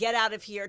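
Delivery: mock loud, forceful yelled shout. Retelling ordering intruders out of the house: retelling own shout. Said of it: "I shouted".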